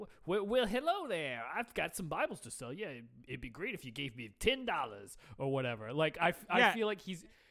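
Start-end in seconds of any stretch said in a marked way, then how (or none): 0.0-5.9 put-on bumbling 1930s con man voice, lower. Describing an actor's performance, imitating a bumbling 1930s con man. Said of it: "a nineteen thirties con man who's just kind of bumbling around".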